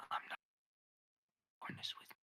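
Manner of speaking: whispering in character. Whispering back in character to another character's threat: whispering in character. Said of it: "Don't actually whisper".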